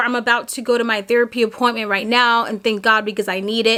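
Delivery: ordinary delivery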